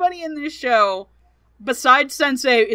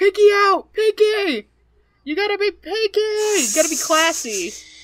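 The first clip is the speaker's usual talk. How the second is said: pitched-up, cartoon-style voice; 9 semitones higher than usual. Comparing a tiny slug's voice to a cartoon: SpongeBob "pinky out" voice. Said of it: "the slug sounds like the SpongeBob Pinky's Out voice".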